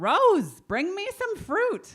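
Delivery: high, loud, carrying yelling call.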